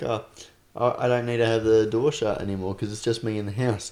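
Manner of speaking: ordinary talk, nothing marked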